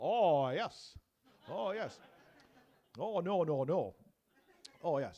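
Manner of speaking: loud, very slow, deliberate, drawn-out drawl. Imitating the Churchill insurance advert's Nodding Dog: Churchill Nodding Dog voice. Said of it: "it's the Nodding Dog".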